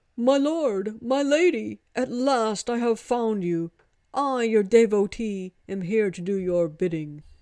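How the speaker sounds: loud, booming, ape-like gibbon voice. A long-toed creature lands before two people and greets them: booming gibbon-like voice. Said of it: "a gibbonish voice boomed".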